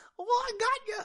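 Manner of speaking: very high-pitched slapstick comic stooge voice. Imagining Batman talking like Curly from the Three Stooges. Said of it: "to sound like Curly from the Three Stooges".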